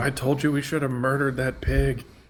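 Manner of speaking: in-character yell, shouted across a distance. Calling out to the party from far away: in-character yell. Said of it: "Gornick is just gonna yell out".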